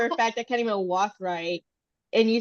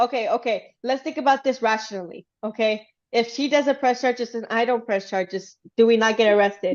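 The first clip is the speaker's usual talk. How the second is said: ordinary talk, nothing marked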